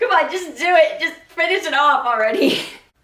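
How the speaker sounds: speaking through laughter. Introducing a Barbie movie video, laughing while talking. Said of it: "Why am I laughing so much?".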